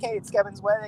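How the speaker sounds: normal talking voice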